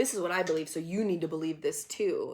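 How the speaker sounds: plain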